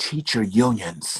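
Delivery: hushed, whispering voice. Confiding a touchy answer to the other speaker: whispering. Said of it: "I have to whisper this".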